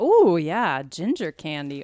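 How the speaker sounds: loud, drawn-out, strong Wisconsin accent. Reacting to a gift of ginger candy: Wisconsin accent. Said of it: "I sounded so Wisconsin".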